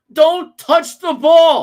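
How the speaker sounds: heated ranting voice.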